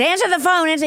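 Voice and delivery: pushy aggressive voice. Retelling a comedian demanding someone answer a ringing phone: imitating an aggressive comedian. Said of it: "really aggressive".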